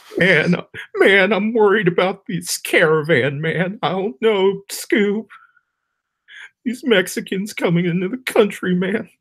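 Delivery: very high, cartoonish voice. Sharing an impression he's been laughing at for days, alt-right Shaggy impression. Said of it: "It's alt-right Shaggy from Scooby-Doo".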